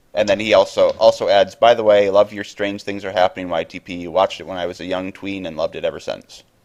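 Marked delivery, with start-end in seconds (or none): none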